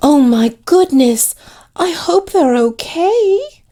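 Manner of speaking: very high, syrupy, saccharine sugary voice. Describing what the character Amelia will say: saccharine Amelia voice. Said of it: "In that very saccharine tone".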